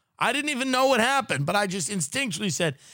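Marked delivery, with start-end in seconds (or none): none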